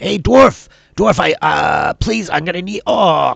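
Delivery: shrill, rasping, very high, very loud yell. Voicing a character running after dwarves, yelling to the dwarves. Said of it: "you hear him yelling out".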